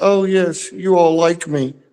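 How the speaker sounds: very high, slow, drawn-out speech-making delivery. Doing a Sally Field impression as a joke: imitating Sally Field's acceptance speech. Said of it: "you gotta do Sally Fields where she's like".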